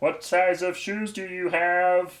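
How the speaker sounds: very high, loud, slow, drawn-out voice. Acting out a friend asking a store for shoe sizes: Andy impression. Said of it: "here's my impression of Andy".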